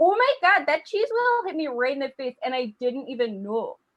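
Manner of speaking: put-on Midwestern Minnesota accent with broad vowels. Telling how a cheese wheel rolls down the hill into Martha; imitating Martha, Minnesota accent. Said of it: "somebody with a Minnesota accent talk".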